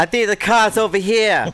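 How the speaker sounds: put-on Boston accent. Podcast bit of two Bostonians arguing back and forth: put-on Boston accent. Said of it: "give us real quick a rendition of two Bostonians arguing back and forth".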